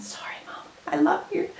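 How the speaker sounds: soft, hushed whispered aside. Going through mom's old clothes that need mending, whispering.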